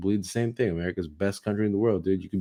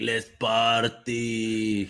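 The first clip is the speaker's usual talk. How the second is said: put-on movie-style Russian gangster accent; 2 semitones higher than usual. Imitating a guest who acted like a movie Russian mob guy. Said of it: "the fucking movie Russian mob guy".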